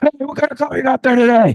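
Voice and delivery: very high, rapid, overly intense excited blurt. Imitating the coach greeting someone at the facility: very intense and excited. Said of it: "just really excited about, like, everything".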